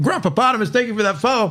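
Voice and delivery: chewing mid-sentence, speaking with mouth full. Thanking someone for a follow, with a mouthful of chicken. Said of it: "Sorry, mouthful of chicken".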